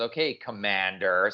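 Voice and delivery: acted, obviously sarcastic delivery. Acting out a character's reply to a commander: imitating a sarcastic reply.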